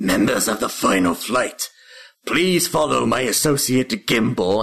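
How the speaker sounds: dragon-like voice of a small imp. Narrating a game scene and voicing a bat-like imp, in a draconic imp voice. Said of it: "the imp speaks in a draconic voice".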